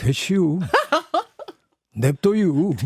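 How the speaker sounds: Chungcheong dialect with local sentence endings. Voicing a future-generation representative, speaker switches to Chungcheong dialect. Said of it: "충청도 사투리로".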